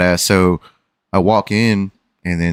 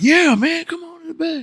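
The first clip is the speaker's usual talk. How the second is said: very high-pitched, laid-on, put-on country accent. Retelling a man's reply to a whispered request, in a put-on country accent. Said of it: "I just gave him some fucking country accent".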